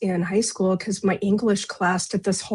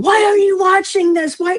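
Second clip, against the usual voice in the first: mock, very high, loud, panicked child's shriek; 12 semitones higher, 6 dB louder than usual. Recalling fleeing a scary TV show as a child, retelling a terrified scream.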